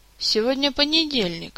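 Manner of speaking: uncertain, hesitant, tentative and doubtful. A man barely standing, gripping a chair back, answers his majesty, uncertain. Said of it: "неуверенно выговорил Кантор".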